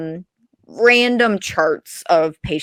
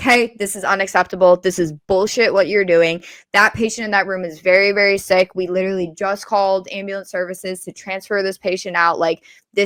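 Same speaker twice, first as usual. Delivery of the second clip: usual speaking voice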